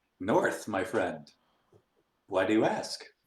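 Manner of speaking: slow, overly friendly, evasive tone. Answering a guard who asks where the party travels: super friendly and evasive. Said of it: "I'm gonna be super friendly and evasive".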